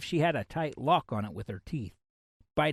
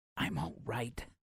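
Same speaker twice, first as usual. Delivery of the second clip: hissed, much quieter and lower; 2 semitones lower, 10 dB quieter than usual. Asked what's wrong while curled over her hand, she answers him: hissed. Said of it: "she hissed as she lifted her head".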